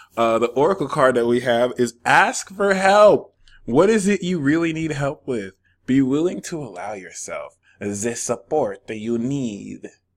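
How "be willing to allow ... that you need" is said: put-on creepy vampire-style voice. Reading an oracle card's message aloud, in a vampire voice. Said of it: "I said it like a vampire".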